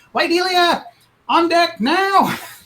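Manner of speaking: very high, drawn-out screaming. Voicing a captain who calls for a crew member: screaming captain. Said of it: "he runs over the little, little pipe and he goes".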